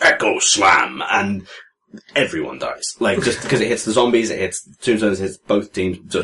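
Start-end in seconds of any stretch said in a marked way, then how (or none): 0.0-1.0 huge, roaring, booming giant bellow, acted out. Retelling a game moment, voicing a giant creature's attack call, bellowing giant shout. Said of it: "he bellows".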